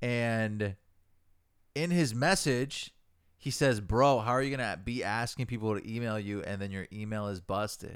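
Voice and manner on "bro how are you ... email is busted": normal talking voice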